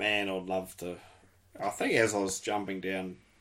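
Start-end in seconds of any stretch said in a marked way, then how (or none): none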